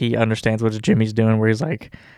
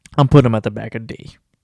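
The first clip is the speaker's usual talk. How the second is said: ordinary talk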